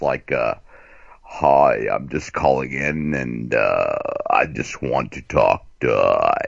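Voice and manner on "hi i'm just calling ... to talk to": mock drugged-out voice, pitched much lower. Mocking people who call in, imitating their drugged-out voice. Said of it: "They always have that drug voice, too, you know, like this".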